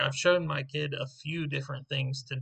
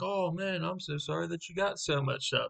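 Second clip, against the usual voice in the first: put-on, hollow, fake sympathetic consolation; 4 semitones higher than usual. Imitating a friend talking to a customer: mock sympathetic tone. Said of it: "He's trying to be sympathetic with the guy".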